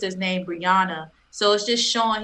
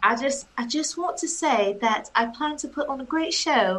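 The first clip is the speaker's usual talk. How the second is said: English accent, higher pitch; 5 semitones higher than usual. Asked what he wants to say to the fans, answering in an English accent. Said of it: "That's my English accent".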